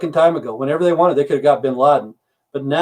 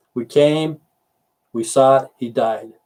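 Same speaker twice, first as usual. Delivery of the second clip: ordinary talk, nothing marked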